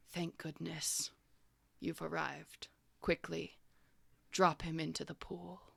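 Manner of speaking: gentle, soft, calm and lovely voice. Narrating a scene, voice a brain speaking psychically to the group: calm, lovely voice. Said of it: "this very calm and lovely voice".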